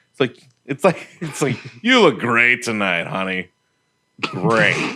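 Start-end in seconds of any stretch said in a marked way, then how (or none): 1.9-5.0 mocking, sarcastic, insincere, backhanded praise. Showing how a line sounds sarcastic, speaker gives a sarcastic compliment. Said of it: "it all sounds sarcastic".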